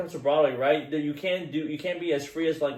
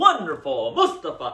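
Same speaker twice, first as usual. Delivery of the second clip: loud stage announcing, every word projected; 2 semitones higher than usual. Showing how stage actors must speak without a microphone: loud stage announcing. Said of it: "You're announcing every word".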